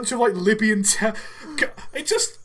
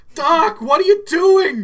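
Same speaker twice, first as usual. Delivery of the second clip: raised, high voice with a slight crack; 7 semitones higher, 8 dB louder than usual. Speaker acting out a Back to the Future scene, Marty voice with slight crack. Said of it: "Marty's got to have like that slight voice crack".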